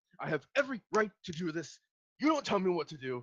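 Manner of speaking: orc voice, high, loud, fast angry yelling. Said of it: "yelling back".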